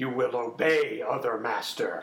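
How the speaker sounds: loud and very unpleasant voice. Voicing the character Doug during the scene, in Doug's very unpleasant voice. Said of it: "says Doug in a very unpleasant voice".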